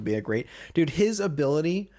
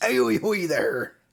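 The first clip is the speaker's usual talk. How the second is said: put-on pirate character voice; 3 dB louder than usual. Imitating a friend's pirate greeting: Whitley Booth pirate voice. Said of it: "His Whitley Booth voice".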